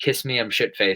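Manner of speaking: plain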